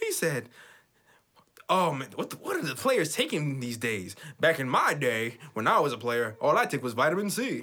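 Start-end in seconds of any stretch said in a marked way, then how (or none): 1.7-7.6 corny dad-joke delivery. Retelling a coach's dad joke in a Jeff Hornacek joke voice. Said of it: "I got my Jeff Hornacek joke, uh, voice".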